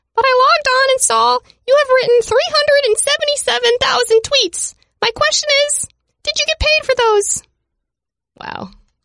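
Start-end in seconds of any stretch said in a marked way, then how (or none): 0.2-7.4 very high, squeaky put-on voice. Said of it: "I do it in his voice".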